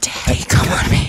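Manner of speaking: slow, loud, sweet whisper. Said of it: "that was way too loud".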